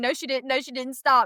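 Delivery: protesting, denying tone. Retelling a car accident, quoting a friend: imitating a friend protesting. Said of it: "Colin saying".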